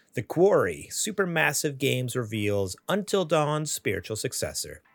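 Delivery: ordinary talk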